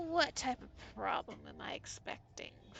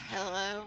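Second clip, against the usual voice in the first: weary gruff voice, louder; 5 dB louder than usual. Voicing a mechanic answering a phone call: tired, gruff voice. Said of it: "a very tired and gruff".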